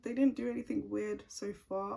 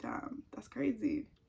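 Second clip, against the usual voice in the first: ordinary talk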